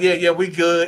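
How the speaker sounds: ordinary talk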